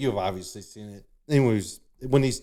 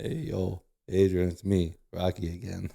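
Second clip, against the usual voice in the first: slow, deliberate character voice, drawn out word by word; 4 semitones lower, 4 dB quieter than usual. Retelling a movie scene, imitating Rocky at the door. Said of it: "Rocky's all".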